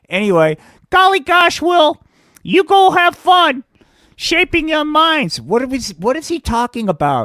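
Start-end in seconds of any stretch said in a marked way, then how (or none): 0.9-5.4 very high, loud, chirpy gee-whiz puppet voice. A puppet character sends will off, in a gee-whiz puppet voice. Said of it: "This is good old [name], man. Before the good folks from the Federal Department of Marijuana, Indoctrination, and Compliance Enforcement decided to pay [name] a visit. And we'll get back to that story because currently [name]'s doing time because you".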